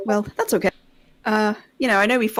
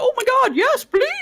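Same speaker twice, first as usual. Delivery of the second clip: very high, full cartoon character voice; 3 dB louder than usual. Acting out an eager in-character reply: Disney character voice. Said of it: "Are you two, like, Disney characters?".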